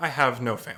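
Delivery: deadpan, flat, with no feeling at all. Voicing Krax, who looks someone in the eyes: flat, emotionless voice. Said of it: "without much emotion in his voice".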